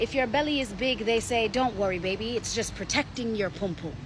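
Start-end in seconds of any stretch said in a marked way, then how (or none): none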